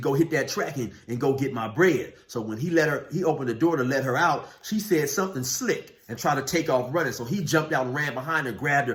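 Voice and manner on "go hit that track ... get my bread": usual speaking voice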